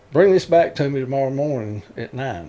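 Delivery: ordinary talk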